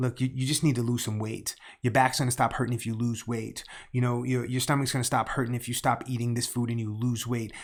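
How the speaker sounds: ordinary talk, nothing marked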